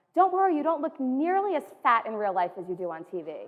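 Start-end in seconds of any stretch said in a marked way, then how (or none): 0.2-1.7 loud, pitched-up voice projected for all around. Retelling what a woman said at a campaign table: imitating someone saying it loudly. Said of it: "she looks at me and says loudly".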